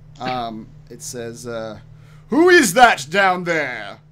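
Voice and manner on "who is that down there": very loud, booming, swooping giant voice. Voicing a distant giant calling out to the players' characters; loud booming giant voice. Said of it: "a very loud, booming voice call out to you in giant".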